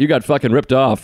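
angry, ranting delivery. Retelling own comedy set to another speaker: retelling own angry set. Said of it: "It was angry".

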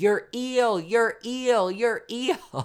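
put-on shrill, very high, slow, drawn-out screaming. Speaker retells opening the back door to call for help, retelling own screaming. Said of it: "I just start screaming".

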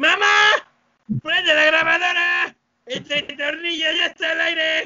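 shrill, very high, squeaky cartoon yell. Telling an anecdote, in a shouted Pato Lucas voice. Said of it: "Se me salió como de... El Pato Lucas".

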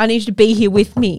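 irritated, fed-up, angry, pissed-off delivery. Retelling words to a midwife during labour: retelling own angry words. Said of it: "I was getting so pissed off".

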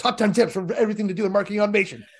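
loud, rapid, quick, snappy, punchy delivery. Coaching how to read a top-ten tips title: very fast and punchy. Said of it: "You've got to say it really fast and punchy".

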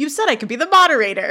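loud, fast, exasperated voice.

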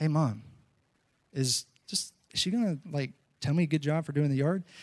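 quiet, hushed, under-the-breath aside. Retelling an aside to their mom beside the lady, the speaker re-enacts speaking quietly. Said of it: "in a quiet voice".

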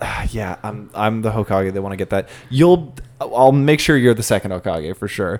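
easygoing quiet murmur. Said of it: "and he's like".

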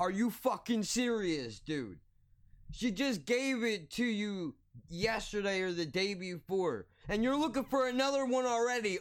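put-on, exasperated, angry, high-pitched yelling rant. Retelling the moment they yelled at a guy, re-enacting the yell. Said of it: "my mouth was open and I'm yelling at him".

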